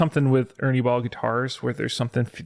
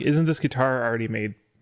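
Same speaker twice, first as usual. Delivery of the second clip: usual speaking voice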